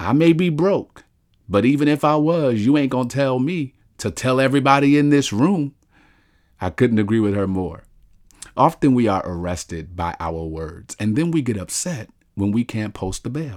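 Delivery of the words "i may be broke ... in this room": put-on grandmother voice, high and sudden scream. Retelling what the grandmother said in church: imitating grandmother screaming. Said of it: "Then she screamed".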